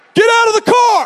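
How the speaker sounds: high, loud taunting shout. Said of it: "he started taunting us".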